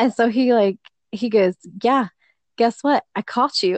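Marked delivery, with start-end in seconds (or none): 1.8-3.8 completely serious, grave tone, no hint of joking. Retelling a joking accusation: imitating a dead serious tone. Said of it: "dead serious tone of voice going on".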